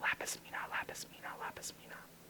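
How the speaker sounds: hushed, breathy whisper, words repeated. Showing a class how the story's voice changed: whispering. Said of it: "when the whispering would happen".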